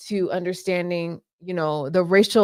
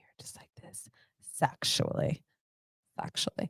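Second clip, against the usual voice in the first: joking, teasing whisper, close and soft; 6 semitones lower, 13 dB quieter than usual. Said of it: "I'm gonna whisper this whole time in your ear".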